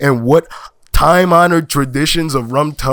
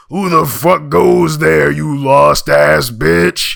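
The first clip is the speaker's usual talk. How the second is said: rough, gruff, creaky, growling dwarf voice. Narrator voicing a being calling out from the darkness of a cavern, gruff booming voice. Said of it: "A gruff voice boomed".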